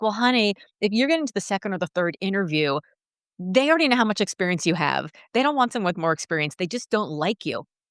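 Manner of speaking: ordinary talk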